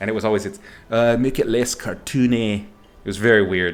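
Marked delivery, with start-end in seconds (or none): 1.2-2.6 clumsy, bad put-on Welsh accent. Quoting a welsh art director's favorite note: bad welsh accent. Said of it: "I'm doing it in an accent".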